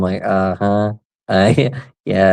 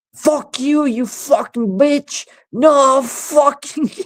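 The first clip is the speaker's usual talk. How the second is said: play-acted very high, shrill, angry, drawn-out yelling. Retelling neighbours bitching at each other over the street: imitating a yelling man. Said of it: "the whole street could fucking hear".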